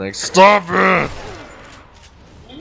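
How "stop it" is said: put-on bratty, cross, childish orc voice. Mimicking how they sound when hit, mock-angry childish orc voice. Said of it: "they sound like an angry, childish orc".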